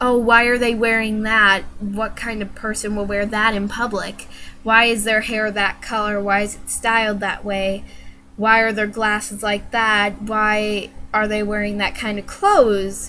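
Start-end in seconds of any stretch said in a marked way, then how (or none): none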